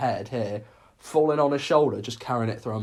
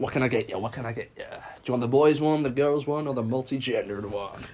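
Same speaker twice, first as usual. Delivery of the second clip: shoddy, very bad fake put-on American accent. Acting out sellers outside shops, in a bad american accent. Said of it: "It's my shittest American accent I could do".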